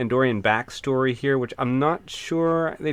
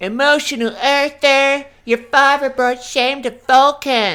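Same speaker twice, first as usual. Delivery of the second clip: mocking seventies cartoon child voice, higher and louder; 12 semitones higher, 8 dB louder than usual. Mimicking the child Vulcans' voice acting from the episode: imitating child Vulcan voice acting. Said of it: "that voice acting on those child Vulcans".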